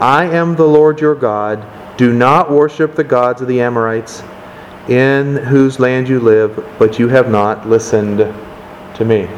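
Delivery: ordinary talk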